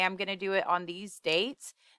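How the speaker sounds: usual speaking voice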